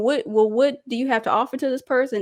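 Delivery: ordinary delivery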